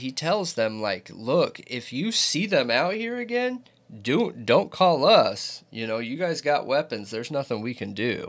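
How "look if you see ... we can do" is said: playful joking. Retelling what a fellow cop told them, as a retold joking remark. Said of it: "And jokingly".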